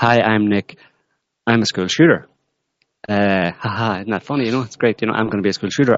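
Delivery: breezy, casual, offhand, nonchalant throwaway tone. Describing how a guy would introduce himself, imitating his nonchalant way. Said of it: "in this kind of nonchalant way".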